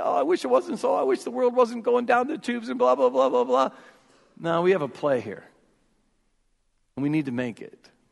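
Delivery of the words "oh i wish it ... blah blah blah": high-pitched, mocking, whiny complaining. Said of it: "we can't just whine and say".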